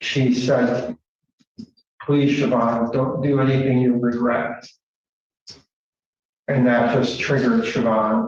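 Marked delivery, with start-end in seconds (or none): 2.0-4.7 put-on calm but fearful, pleading tone. Recalling the last words heard before being shot, retelling a calm but fearful plea. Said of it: "you could tell that there was fear in her voice".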